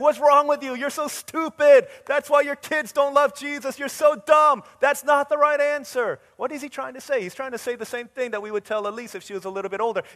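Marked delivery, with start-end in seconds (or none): 0.0-6.2 furious, berating yell, very loud and pitched up. Retelling how he scolded parents for a wrong answer: imitating someone yelling. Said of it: "And he yells at them".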